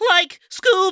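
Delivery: very high, loud, overdone cartoon voice. Asked to give his Shaggy, attempting it in a Shaggy voice. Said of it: "give us your Shaggy".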